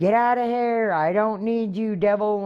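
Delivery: high, crazed screaming like a madwoman. Retelling being alone at home at night: retelling own screaming. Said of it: "I'm screaming in my house like a crazy lady".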